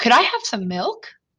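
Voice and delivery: milk said with rising pitch at end. Explaining what a question mark means, pitch rising at the end on 'milk'. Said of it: "See how my voice kind of went up like that?".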